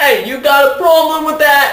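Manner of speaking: bad Brooklyn accent, very high and loud. Recalling how Babs Seed talked, in a bad Babs Seed Brooklyn accent. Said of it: "this whole thing in a Brooklyn accent".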